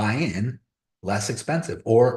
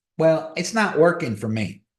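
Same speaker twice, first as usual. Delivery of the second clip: put-on country-bumpkin north Georgia mountain accent; 6 semitones higher than usual. Retelling what their sister said about trying something, in a country georgia accent. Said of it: "I'm speaking in her accent because she lives up in Georgia".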